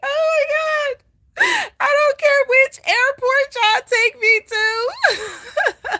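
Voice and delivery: acted, desperate sobbing, very high, loud wailing. Retelling a phone call asking for a ride, imitating her own crying. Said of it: "I was crying like".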